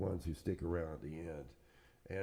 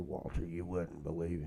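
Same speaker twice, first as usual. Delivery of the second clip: put-on Georgia accent. Retelling a former roadie's answer to a question, imitating Twigs's Georgia accent. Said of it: "he had the Georgia accent".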